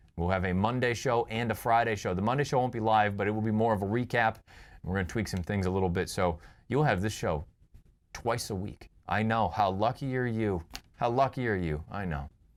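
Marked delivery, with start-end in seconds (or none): 9.1-12.3 slow, heavy sarcasm laid on thick. Announcing that the show will now air twice a week: thick sarcasm. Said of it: "I'm laying the sarcasm on thick there".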